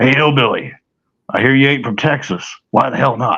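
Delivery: coarse, rough, gruff voice. Retelling what a voice suddenly said to him, gruff voice. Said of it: "I hear this gruff voice".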